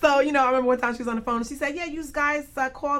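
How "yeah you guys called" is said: put-on Long Island accent. Speaker recalls what a woman said on the phone, in her strong Long Island accent. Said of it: "really New York, like you know, Long Island accent".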